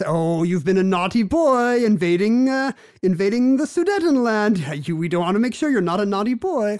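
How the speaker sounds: put-on condescending voice. Describing a film scene where Chamberlain speaks to Hitler, imitating condescending Neville Chamberlain. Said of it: "he's very condescending to Hitler".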